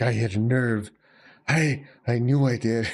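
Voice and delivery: smirking, wounded voice while coughing. Voicing a wounded enemy who was just shot: smirking while coughing up blood. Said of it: "smirks at you and coughs out blood".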